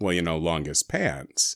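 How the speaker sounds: very low, seductive, sultry voice. Making a joke about Homestar in a sultry voice. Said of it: "say in a sultry voice".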